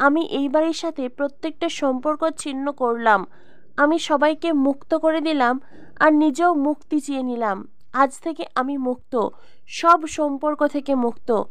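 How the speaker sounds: plain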